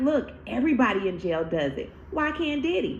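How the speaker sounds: plain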